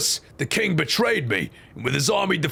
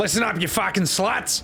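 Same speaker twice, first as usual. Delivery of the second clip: bad put-on Australian accent, woman's voice. Voicing a horrible australian woman character: australian woman's accent. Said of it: "a horrible Australian woman? That would sound like this".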